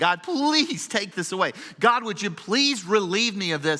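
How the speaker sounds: put-on desperate, begging, imploring, pleading voice. Speaker acting out the Apostle Paul's words to God, acting out pleading. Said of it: "he's pleading".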